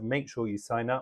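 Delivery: ordinary talk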